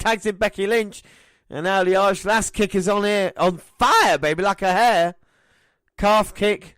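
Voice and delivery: high, loud, excited play-by-play announcer call.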